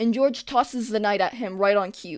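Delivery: ordinary delivery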